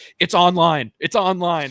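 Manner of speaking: high, loud, stretched-out urgent scream. Retelling a golfer screaming at his ball to his caddy: imitating someone screaming. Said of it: "he immediately screams to his caddy".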